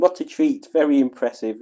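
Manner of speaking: ordinary talk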